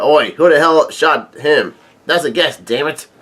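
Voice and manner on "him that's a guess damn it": ordinary talk, nothing marked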